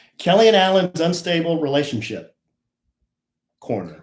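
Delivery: dramatic pause right before the word "corner". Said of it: "Why are you pausing?".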